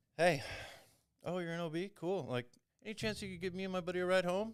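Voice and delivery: acting casual, totally calm and cool. Retelling phoning a girl to ask for a ride home, acting totally calm and cool. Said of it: "Totally calm, cool".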